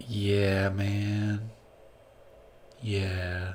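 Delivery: very quiet, barely-there murmur, male, drawn out long. Playing a character in a sauna beside a sleeping figure: talking very quietly. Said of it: "'cause I'm talking real quiet right now".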